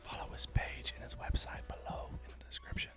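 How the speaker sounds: soft, hushed, breathy whisper. A video host thanks the artist who made the graphic, whispering. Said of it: "I don't know why I'm whispering".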